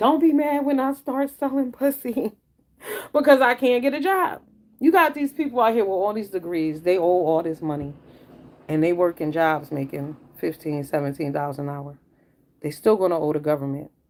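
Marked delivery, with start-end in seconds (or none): 0.0-4.4 mock full-on high screaming outburst. Retelling a young girl's TikTok video: imitating someone screaming. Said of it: "she was screaming".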